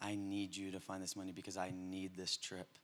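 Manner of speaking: very quiet, hushed, desperate pleading. Retelling their mom's plea to them, imitating her desperate pleading. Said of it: "the desperation in her voice was like".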